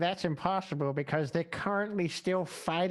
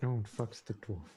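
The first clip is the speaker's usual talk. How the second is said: very low mutter under the breath; 8 semitones lower, 6 dB quieter than usual. Voicing a priestess of death under her breath: under her breath. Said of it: "Under her breath, she's like".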